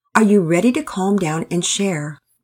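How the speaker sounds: ordinary delivery, nothing marked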